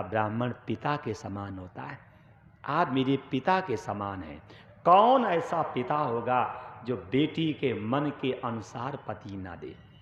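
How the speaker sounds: usual speaking voice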